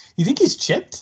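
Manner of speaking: dopey, high-pitched voice.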